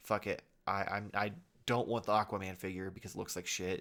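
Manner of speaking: plain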